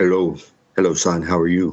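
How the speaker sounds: put-on deep, low, mumbled French accent. Imitating how a man greeted people; almost-mumbled deep french accent. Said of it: "in that almost mumble French accent he had because it was so and it was so deep".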